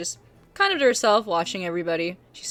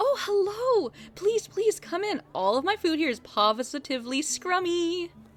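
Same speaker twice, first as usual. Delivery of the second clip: very high, bubbly, cheery, welcoming voice; 12 semitones higher than usual. Game master voicing a halfling greeting the arriving players, cheerful female halfling voice. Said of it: "very cheerful".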